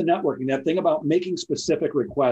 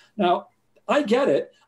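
plain

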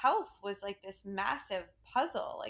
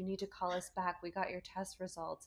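voice full of terror; 3 semitones lower, 7 dB quieter than usual. Retelling a call from a new gynecologist's office: imitating a terrified caller. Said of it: "voice of terror on the phone".

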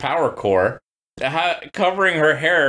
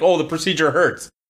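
ordinary talk, nothing marked

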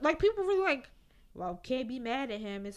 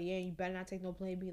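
low, hushed, close-in half-whisper; 4 semitones lower, 8 dB quieter than usual. Retelling what a partner said during sex: imitating a man half-whispering. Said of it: "whispering in my ear".

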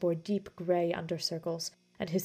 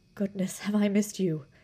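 whispering, breathless, out of breath; 2 semitones higher, 3 dB louder than usual. Stealing a moment alone in the parlor after dinner, a man, whispered breathlessly. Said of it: "Basil whispered breathlessly".

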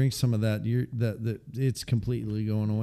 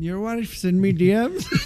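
drawn-out, high, loud put-on Irish brogue; 8 semitones higher, 5 dB louder than usual. Joking with the other speaker about torching his beer: put-on irish accent. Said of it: "before you go into the Irish".

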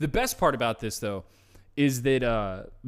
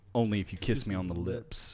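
put-on flat deadpan, much lower and quieter; 6 semitones lower, 6 dB quieter than usual. Retelling the other person's reply, said looking the speaker dead in the eye, imitating a deadpan delivery.

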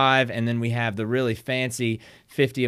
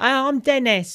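terrible put-on British accent, very high; 14 semitones higher, 4 dB louder than usual. Retelling a college prank of meeting strangers: terrible British accent. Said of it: "a terrible British accent".

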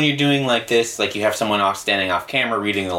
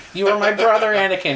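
scream, pitched much higher; 11 semitones higher than usual. Describing a show's flashback overlay, the speaker imitates Ewan McGregor screaming. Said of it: "Ewan McGregor is screaming at Anakin".

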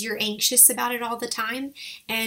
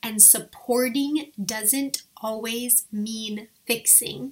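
slow, drawn-out, measured, deliberate emphasis. Speaker addresses the husbands in the audience, saying it slowly. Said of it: "Do you hear how I said that slowly?".

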